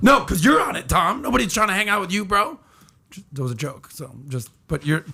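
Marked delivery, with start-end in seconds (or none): 0.0-2.6 shouting, higher pitch. Teasing another speaker about Facebook, yelling. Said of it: "you can stop yelling".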